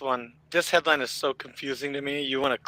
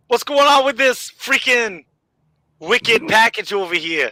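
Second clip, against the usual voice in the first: put-on Boston accent, very loud, pitched up; 8 semitones higher, 8 dB louder than usual. Playing a security guard finding a package, in a put-on Boston accent. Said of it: "do your Boston accent as a security guard finding this package".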